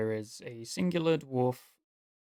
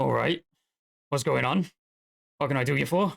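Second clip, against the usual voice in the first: put-on old dwarf character voice, louder; 2 semitones higher, 6 dB louder than usual. Voicing the old dwarf as he looks up at two talkers: voicing an old dwarf. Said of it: "the dwarf looks up at the two of you".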